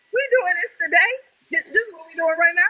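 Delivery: acted, stunned, very high, fast, tearful crying disbelief. Speaker retelling their reaction when someone announced the news, retelling crying. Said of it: "and I'm crying".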